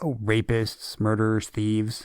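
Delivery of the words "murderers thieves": ordinary delivery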